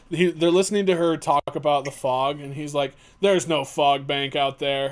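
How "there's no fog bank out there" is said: put-on dry, flat, expressionless deadpan. Retelling a movie character denying the fog: imitating a deadpan delivery. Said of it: "just fucking deadpan exactly like that".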